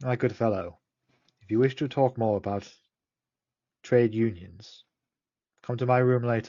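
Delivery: soft, hushed, under-the-breath aside. A player's character goes up to the person at reception and speaks quietly. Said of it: "just say quietly".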